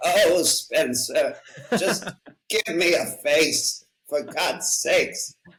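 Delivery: put-on high-pitched, slow, drawn-out old lady voice. Acting out an inner old lady waking up: Katharine Hepburn voice. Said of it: "my old lady is definitely Katharine Hepburn".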